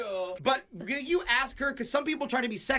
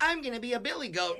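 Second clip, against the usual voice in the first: plain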